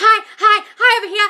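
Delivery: desperate, needy, shrill, very high, very loud, drawn out. Mocking someone trying to get a man's attention: mock-desperate, attention-seeking. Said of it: "That's desperate, needy energy".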